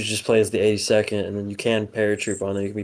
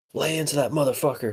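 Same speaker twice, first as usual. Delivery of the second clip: mock yelling at a higher pitch; 6 semitones higher than usual. Describing men heard yelling inside a building, imitating American guys yelling. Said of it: "they're just they're yelling like".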